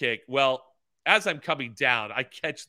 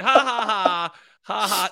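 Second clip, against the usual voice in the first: very high, drawn-out, jeering, taunting laughter. Retelling people pointing and laughing at him after a fall, imitating mocking laughter. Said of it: "laughing at me, going".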